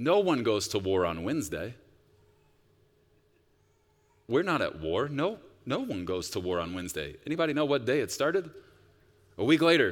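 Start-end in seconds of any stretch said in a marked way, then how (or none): 0.0-7.1 mock, heavily sarcastic, dripping with sarcasm. Quoting Vladimir Putin's words before the war began: imitating Putin, mock sarcastic. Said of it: "Very sarcastically, he said".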